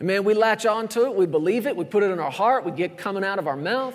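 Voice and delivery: plain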